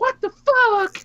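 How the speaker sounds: very high, blurted-out exclamation. Ranting about a wrestling style, doing Jim Cornette reacting. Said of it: "It is Jim Cornette going".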